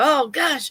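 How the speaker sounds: high, exasperated talking to oneself. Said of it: "And then I go".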